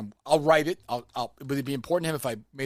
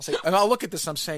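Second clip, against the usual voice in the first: ordinary delivery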